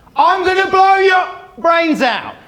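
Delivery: very high, loud, acted-out raging shout. Recounting what a farmer with a shotgun yelled at him: retelling an angry farmer's yell. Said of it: "decided to yell at me".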